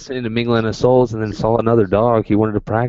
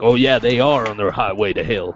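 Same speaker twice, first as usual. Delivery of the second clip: put-on preacher voice with Armenian accent. Imitating preachers who preach against rock songs: imitating an Armenian preacher. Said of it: "You sound like an Armenian preacher".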